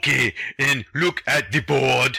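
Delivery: slow delivery, each word drawn out. Imitating your grade ten French teacher speaking to the class, in an Arnold Schwarzenegger-like teacher voice. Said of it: "So your French teacher was Arnold Schwarzenegger?".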